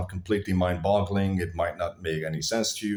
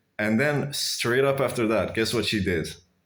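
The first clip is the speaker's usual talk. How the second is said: ordinary delivery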